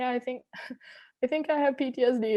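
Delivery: mock high, hysterical sobbing through the words. Retelling a doctor's appointment, acting out their own hysterical crying. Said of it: "as I'm like crying hysterically".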